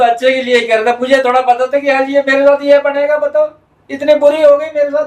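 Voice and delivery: talking through sobs. In a skit, Pandit ji tells the others what happened to him, crying while talking. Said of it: "क्यों रो रहे हो आप?".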